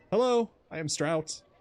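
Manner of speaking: trembling, timid, quavering nervous voice, very high. Narrator voicing a nervous Serval who is afraid of the listener, Strout's quavering voice. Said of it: "She says in a quavering voice".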